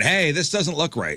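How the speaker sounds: put-on high shouted yell. Acting out yelling at a flight attendant: mock yelling. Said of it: "you yell at the flight attendant".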